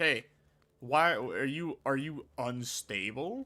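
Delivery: very slow, drawn-out, stretched delivery. Retelling a call from the bank about a donation: imitating a bank employee. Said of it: "They'll be like".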